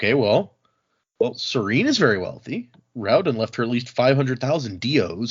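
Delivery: normal talking voice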